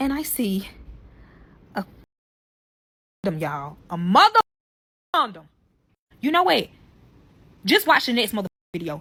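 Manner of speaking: worked-up, upset, heated and angry. Telling a story to viewers, getting to the worst part: heated and angry. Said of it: "I'm heated on this one".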